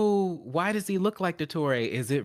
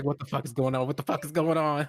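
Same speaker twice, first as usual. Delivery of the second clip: acted-out, mock-terrified panic; 3 semitones lower than usual. Recalling a scary game moment, the speaker is retelling terrified panic. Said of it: "I was terrified, I was like".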